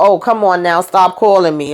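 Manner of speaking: ordinary delivery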